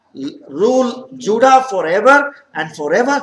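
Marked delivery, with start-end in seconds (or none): none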